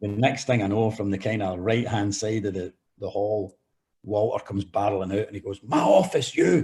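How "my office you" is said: shrill, very high-pitched, loud angry yell. Retelling a manager ordering the speaker to his office: imitating someone shouting. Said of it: "he was shouting at me all the way".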